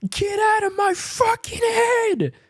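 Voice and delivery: put-on, very high, shrill, full-throated yell. Recalling words yelled at the mirror in the parents' room, retelling a yell. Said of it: "the words that I yelled out".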